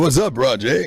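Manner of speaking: very loud, drawn-out code-switched delivery. Showing how the other speaker code-switches: code-switched voice. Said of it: "That's what you do".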